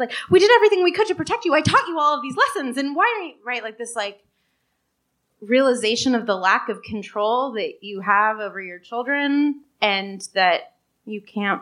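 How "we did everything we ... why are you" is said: words rattled off fast, rushed and pitched up. Voicing parents who tried to protect their child: imitating someone talking really fast. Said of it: "talking really fast".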